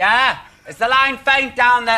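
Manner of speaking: loud voice. Asking a caller on a faint phone line: shouting down the phone. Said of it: "I don't know why I'm shouting".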